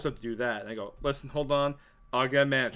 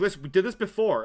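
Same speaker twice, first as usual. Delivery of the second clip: put-on angry complaining tone, higher pitch; 5 semitones higher than usual. Retelling a wife arguing about a coupon: imitating someone bitching. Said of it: "she starts bitching at me".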